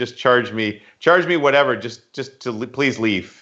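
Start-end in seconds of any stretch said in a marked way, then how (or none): none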